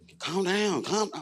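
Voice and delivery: shrill loud yell. Retelling a restraint when a coworker yelled in the ear: imitating someone yelling. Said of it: "she's yelling in my ear".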